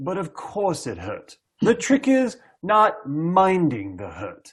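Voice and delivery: put-on English accent, very cool and swooping. Retelling a man's answer to the other guy in the room, put-on english accent, very cool. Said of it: "the best English that you're going to get out of me in terms of an English accent".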